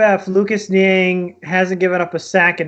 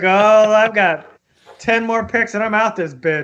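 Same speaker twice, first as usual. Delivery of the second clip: put-on checked-out, detached, listless voice; 3 semitones higher than usual. Joking that Goodell has senioritis, imitating Goodell, checked out. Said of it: "He's like".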